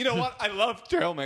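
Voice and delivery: put-on high-pitched kid voice.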